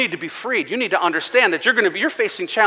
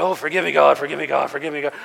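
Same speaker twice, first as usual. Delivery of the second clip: desperate, groveling, begging tone; 5 semitones lower than usual. Acting out someone beating themselves up in church: imitating a groveling plea for forgiveness. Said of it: "beating yourself with a, a pack of reeds and going".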